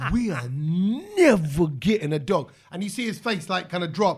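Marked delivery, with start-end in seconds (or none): 0.1-2.5 mock emphatic anger, very slow, "never" stressed, not drawn out. Retelling telling a child off about a dog: retelling an angry outburst. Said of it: "I was angry at it all".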